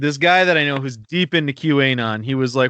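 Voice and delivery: normal talking voice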